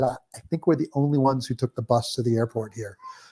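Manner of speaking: soft, hushed half-whisper under the breath. Retelling a remark to the wife in business class: imitating own half-whisper. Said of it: "I whispered to my wife".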